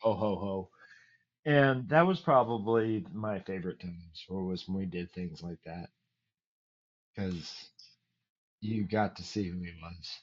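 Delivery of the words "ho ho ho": big, deep, burly bass voice. Retelling a father handing out hospital gifts: imitating a big deep voice. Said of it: "big deep voice".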